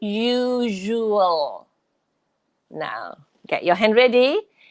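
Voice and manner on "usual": usual drawn out very slowly, syllable by syllable. Teaching pronunciation to a listener: usual drawn out very slowly. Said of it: "I say it very slowly for you".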